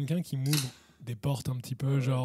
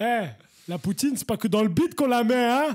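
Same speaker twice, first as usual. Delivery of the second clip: put-on Belgian accent, very high and loud; 9 semitones higher, 7 dB louder than usual. Speaker jokes in the middle of a group conversation, put-on Belgian accent. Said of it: "Arrêtez de faire l'accent belge".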